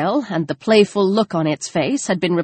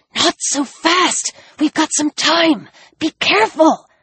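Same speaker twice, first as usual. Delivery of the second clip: sharp, high-pitched hissed words; 8 semitones higher than usual. Narrator reads her line as she backs away carrying Alex, hissing. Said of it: "and she hissed".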